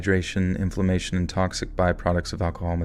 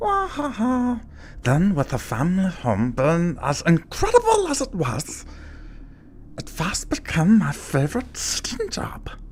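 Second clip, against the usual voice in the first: very high creature voice with widely swinging pitch; 12 semitones higher than usual. Asked to do a Smeagol impression while telling a story: Smeagol impression. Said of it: "Do a Smeagol impression".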